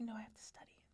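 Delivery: theatrical, dramatic, breathy whisper. Retelling refusing friends' invitations to go out, imitating own dramatic past self. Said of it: "I'd be really dramatic about it".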